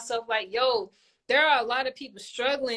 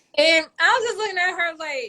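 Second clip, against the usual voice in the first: usual speaking voice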